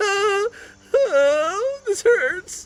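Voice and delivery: very high, very slow, drawn-out crying whine. Narrating the game, voicing Peel complaining with every step, whining like Peel. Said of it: "Peel is like whining and complaining".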